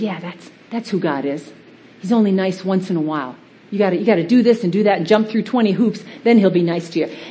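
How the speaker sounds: sly, hushed, tempting stage whisper. Acting out Satan half-whispering lies about God: half-whispering as Satan. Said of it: "He whispers and he goes".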